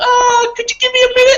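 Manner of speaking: very high, squeaky, piping voice. Retelling a story about walking in on Mike Tyson: Mike Tyson voice. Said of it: "in his Tysonist voice goes".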